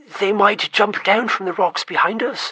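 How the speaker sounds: anxious, uneasy tone. Reading a story aloud, a dwarf fears attack from behind: worried tone. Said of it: "said Thrain in a worried tone".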